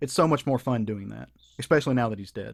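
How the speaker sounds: thick, heavy, laid-on sarcasm. Mocking critics who trash a comic creator: very sarcastic. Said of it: "That's me being very sarcastic".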